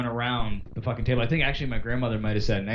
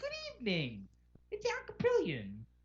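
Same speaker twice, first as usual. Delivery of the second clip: very high, soft, swooping sing-song weatherman voice; 14 dB quieter than usual. Show how the meteorologist greets listeners in the evening, in a high Al Kaprielian voice. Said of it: "Is the high voice".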